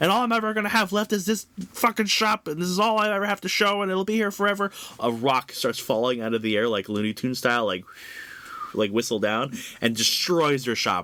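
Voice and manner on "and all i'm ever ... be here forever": play-acted, very high, shrill, ranting yell. Retelling a comic scene where Bernadette monologues at them: imitating Bernadette yelling. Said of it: "while Bernadette's yelling at them".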